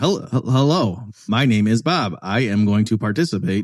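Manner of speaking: slow, halting, mechanical robot speech. Answering a welcome with a joke greeting: robot voice. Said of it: "I'm doing a robot".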